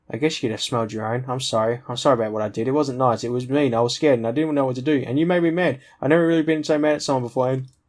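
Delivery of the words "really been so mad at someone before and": plain reading voice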